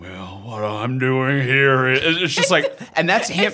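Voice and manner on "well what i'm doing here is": deep, gravelly attempted whisper, slower. Act out the father answering Betty in a scene, as Sam Elliott trying hard to whisper. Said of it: "trying so hard to whisper".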